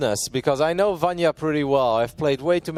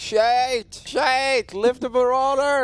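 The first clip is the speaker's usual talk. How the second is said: very high, slow, drawn-out scream; 9 semitones higher than usual. Retelling watching the game at the TV: imitating own past screaming. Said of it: "I'm screaming".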